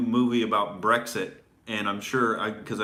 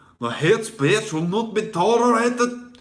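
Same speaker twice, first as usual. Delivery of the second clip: very high, loud, awful put-on Scottish accent; 11 semitones higher, 5 dB louder than usual. Mocking the police in Scotland, delivered in a horrible Scottish accent. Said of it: "Sorry for the horrible Scottish accent".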